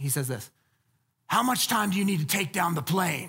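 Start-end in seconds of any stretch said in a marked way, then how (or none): 1.3-3.3 rasping delivery. Showing would-be scriptwriters how Kurt Weller says it, Kurt Weller low raspy voice. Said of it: "that like low, raspy voice".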